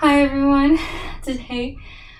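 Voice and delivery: very loud, breathless voice. Greeting everyone right after going up and down the stairs, out of breath. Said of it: "I still have breath from like going up and down the stairs".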